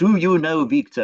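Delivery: poorly done, put-on French accent. Quoting a mother talking to her child, in a kind of French accent. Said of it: "in a kind of French accent".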